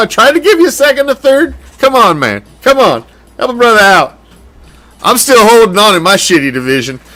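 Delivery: playful, high-pitched begging and pleading. Begging a league rival who refused a trade: mock begging and pleading. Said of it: "that's enough of fucking begging and pleading".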